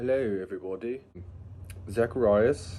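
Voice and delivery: put-on British accent. Greeting viewers at the start of a video: put-on british accent. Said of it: "I think this is a British accent".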